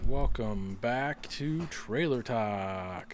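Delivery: very slow, drawn-out broadcast announcer voice. Opening the show trailer talk in an announcer voice. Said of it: "That's my announcer voice".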